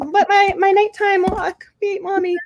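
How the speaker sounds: drawn-out little dog voice. Imagining what her dog is saying while she ignores him: voicing her dog. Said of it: "I do the voices".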